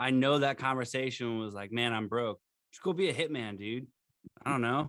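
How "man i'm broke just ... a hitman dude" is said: imitated sarcastic tone. Acting out another guardsman's imagined suggestion: imitating a sarcastic suggestion. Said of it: "A hundred percent sarcastic like that".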